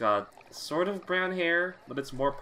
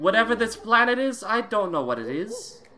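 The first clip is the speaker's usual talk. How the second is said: high, loud, musing British voice. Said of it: "this British voice".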